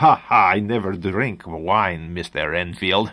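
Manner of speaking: put-on Eastern European vampire nobleman accent. Describing a neck-biting nobleman, quoting him in an Eastern European accent. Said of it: "Eastern European accent".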